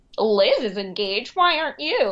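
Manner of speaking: classic put-on transatlantic accent. The oldest cousin mimics an imagined remark about being engaged, in a transatlantic accent. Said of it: "that was the best transatlantic accent I have ever heard".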